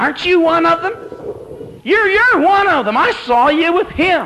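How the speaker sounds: tiny, shrill, squeaky little voice, very high. Telling the story of a little girl who comes up to him: little squeaky voice. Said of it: "she says in a little squeaky voice".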